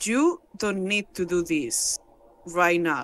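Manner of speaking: grave, serious, very low delivery. Voicing a character speaking to others, trying a serious voice. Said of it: "he's gonna try to have a serious voice".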